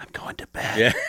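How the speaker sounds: soft, light whisper. Retelling how she passes the couch to say goodnight: imitating a whisper. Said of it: "she just walks by and whispers, like".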